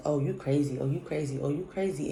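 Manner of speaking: ordinary delivery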